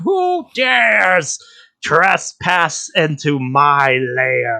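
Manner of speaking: put-on very slow, high, drawn-out, cranky old woman voice. Voicing the one in the lair, like an angry old lady woken from her nap. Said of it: "like a very angry old lady that was just awoken from her nap".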